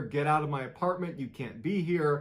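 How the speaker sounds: plain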